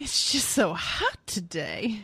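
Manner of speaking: put-on old Southern woman accent. Imitating how a man talks, in an old Southern woman voice. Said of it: "he's like this old Southern woman".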